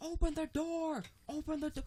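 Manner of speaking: shrill, very high, frantic screaming. Retelling the cat latching onto the speaker's thumb, act out the scream. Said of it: "So I'm screaming and cursing".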